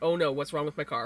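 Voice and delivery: put-on panicked freaking out. Retelling hearing a pop sound while driving over the mountain: retelling freaking out. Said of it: "freaking out".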